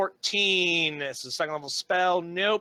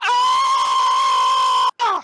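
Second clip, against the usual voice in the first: screeching shriek, very high and very loud; 10 dB louder than usual. Getting right in his ear, the speaker gives a classic Shendu scream. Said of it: "I give him like a classic Shendu scream".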